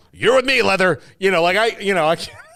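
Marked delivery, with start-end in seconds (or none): 0.2-1.0 mock sports announcer voice. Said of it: "And he's".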